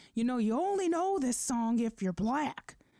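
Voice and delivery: pissed-off, angry, high-pitched shout. Retelling what an older man yelled out: imitating an angry yell. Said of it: "yelled out, like, he was pissed".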